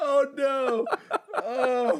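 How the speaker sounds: very high, helpless, can't-stop crying. Talking about a show they barely know: crying, can't stop. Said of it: "I'm crying. I can't stop".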